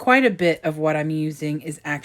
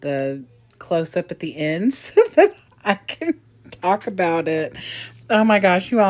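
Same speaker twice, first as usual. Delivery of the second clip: loud, laughing hard through the words; 4 dB louder than usual. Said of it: "I'm laughing at myself so hard".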